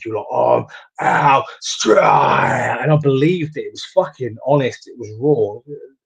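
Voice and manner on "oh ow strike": gritty, rough, creaky little growl in the throat. Retelling the other speaker's promo line: imitating a growl in the voice. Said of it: "that little growl you had in your voice".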